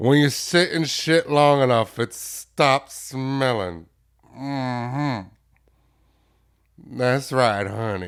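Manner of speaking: booming, slow drawl, drawing out "honey". Replaying a core memory, the speaker quotes a woman: imitating her voice. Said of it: "And I say it in her voice".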